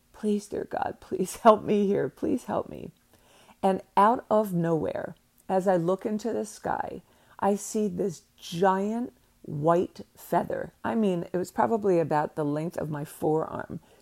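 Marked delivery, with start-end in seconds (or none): 0.2-2.9 begging, pleading tone. Retelling a prayer to the sky during a bad trip: retelling a plea. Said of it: "I'm pleading".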